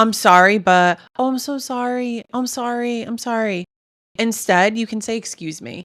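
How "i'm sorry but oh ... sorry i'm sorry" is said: pitched-up, excessive, repeatedly apologetic tone. Giving dating advice, the speaker mimics someone on a date: mock over-apologizing. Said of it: "If you say sorry a lot on the date".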